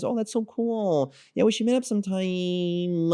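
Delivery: very high, slow, unmasculine way of talking. Showing how not to talk to a date: unmasculine way of talking. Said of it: "use your voice in a masculine way, if you talk like this".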